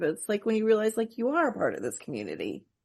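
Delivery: soft, tearful, choked-up voice, words catching. Talking with another person about a story that moves them: choked up. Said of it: "getting choked up all over again about it".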